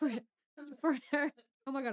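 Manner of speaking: loud, high giggling breaking up the words. Trying to continue a point while laughing at oneself: laughing while talking. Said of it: "I'm laughing at myself".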